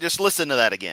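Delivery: ordinary talk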